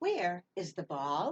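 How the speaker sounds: slow delivery, pitch rising at the end on "ball". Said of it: "Did you hear my voice go up at the end?".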